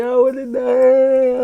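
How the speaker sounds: very loud, very high, drawn-out wailing, sobbing scream. Reenacting his past self grabbing her, retelling screaming and crying. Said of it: "I'm screaming, I'm crying and shit".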